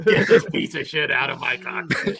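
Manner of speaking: mock drunken shouting voice. Acting out a drunk Vince McMahon walking down the plane aisle: imitating drunk Vince McMahon yelling. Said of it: "Drunk McMahon going and kicking in the fucking pilot door and just yelling".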